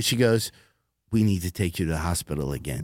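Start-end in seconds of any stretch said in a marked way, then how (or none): 1.1-2.8 put-on motherly tone, lower and quieter. Retelling what the manager said on stage: imitating a motherly manager. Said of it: "she was so motherly".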